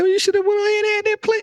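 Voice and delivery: high, fast, mocking tone.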